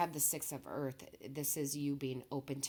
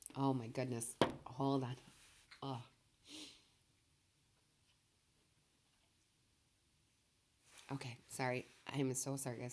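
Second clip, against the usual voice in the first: struggling to hold together, composure breaking mid-sentence. Addressing viewers, pausing while struggling to keep composure. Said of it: "I'm trying to gain my composure here".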